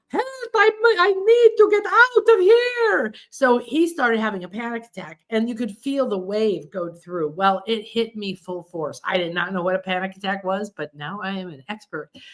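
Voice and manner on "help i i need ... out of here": put-on little Italian accent, very high, drawn-out. Retelling what a man at the back said as he stood up, in an italian accent. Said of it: "in his little Italian accent".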